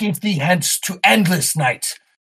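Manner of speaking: echoing, amplified scream, pitched high. A game narrator voices a character screaming in battle, Andre's amplified scream. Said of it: "Andre's voice is amplified when he screams".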